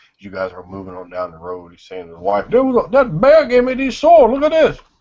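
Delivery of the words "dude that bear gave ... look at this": raised, carrying, very high, loud call. Narrating, voicing a man talking to his wife as the group leaves: loud voice. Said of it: "he's kind of a loud voice".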